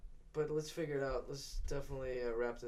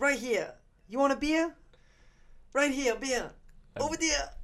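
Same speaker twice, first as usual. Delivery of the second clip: put-on Australian accent, very high, very loud; 12 semitones higher, 10 dB louder than usual. Calling out to a buddy as Tiger, in an Australian accent. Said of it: "that was my Australian accent right there".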